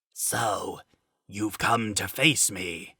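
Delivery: weak, feeble, hushed, rasping ghostly voice. A narrator reads a knight speaking to a woman holding a sword: weak, rasping voice. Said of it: "The knight's voice is like a phantom, weak and rasping".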